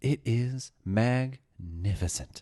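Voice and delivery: pure wonder, awestruck and reverent voice. Retelling a space flight moment: William Shatner voice. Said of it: "just beautiful William Shatner voice".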